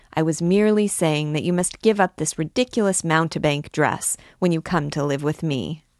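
ordinary delivery

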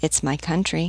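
ordinary delivery

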